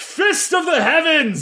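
very high, shouted battle-cry yell. A player describes their character raising a mace in the air, yelling. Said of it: "raise it in the air and yell".

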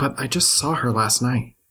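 half-muttered aside. Voicing a character who sits down and speaks to Becca: half under my breath. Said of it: "half under my breath".

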